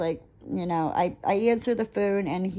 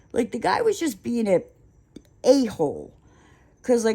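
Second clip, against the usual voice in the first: usual speaking voice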